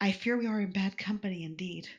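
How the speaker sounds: low, quiet voice, close to the ear. Voicing a character who leans in so others won't hear: speaking low into someone's ear. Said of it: "lean into your ear so she can talk without too many people hearing".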